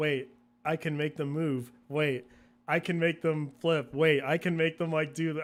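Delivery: ordinary talk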